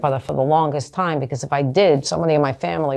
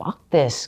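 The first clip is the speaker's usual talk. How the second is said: imitated angry voice. Retelling a childhood reaction to a parent's refusal: retelling own angry words. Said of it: "I was so angry at that point".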